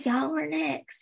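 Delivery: soft, hushed, voiced stage whisper. Retelling what the bride said before the altar: imitating Lauren half-whispering. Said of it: "she whispers to John and Abby".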